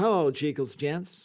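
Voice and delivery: sort of generic American accent. Urged to have a go at an accent, the speaker settles for a generic American accent. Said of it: "I can do a sort of generic American".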